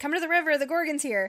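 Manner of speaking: play-acted eager excitement, fast and high. Retelling a book scene where a character calls the girls to the river: imitating Pippa's excited voice. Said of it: "Pippa very excitedly says".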